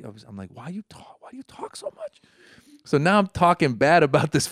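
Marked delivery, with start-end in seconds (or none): 0.5-2.2 barely audible whisper under the breath. Retelling whispering to himself in the car about a chatty five-year-old: imitating own whisper. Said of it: "I start whispering to myself".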